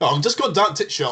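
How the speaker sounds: put-on heavy Yorkshire accent, pitched very high. Retelling a fellow player's reply: imitating Callum's Yorkshire accent. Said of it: "how strong of a Yorkshire accent he had".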